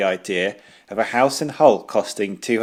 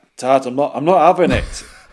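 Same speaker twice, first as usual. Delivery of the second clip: loud put-on Northern English accent; 4 semitones higher, 5 dB louder than usual. Retelling own words after two years in Grimsby: imitating own Northern accent. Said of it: "my voice changing to Northern".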